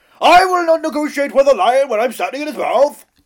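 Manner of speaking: very high, loud, declaiming statesman voice. Trying out a Winston Churchill impression after being urged: Winston Churchill impression. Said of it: "Go on, give it a try".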